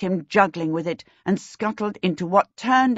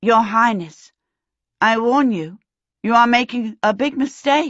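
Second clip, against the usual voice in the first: unsteady, wobbly voice, fighting back a laugh; 3 semitones higher, 4 dB louder than usual. A character addresses the king while trying not to laugh; wobbly voice. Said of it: "Her voice came out wobbly".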